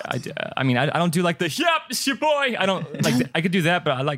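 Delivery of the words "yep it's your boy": very high, put-on celebrity voice.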